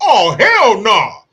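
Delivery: very loud, high, belted exclamation. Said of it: "he tells his son".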